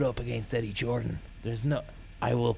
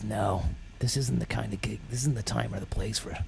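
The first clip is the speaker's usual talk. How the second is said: usual speaking voice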